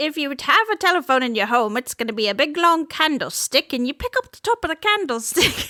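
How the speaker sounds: accent gradually turning Irish. Explaining an old candlestick telephone, with the accent drifting into irish. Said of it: "It gets Irish after a while".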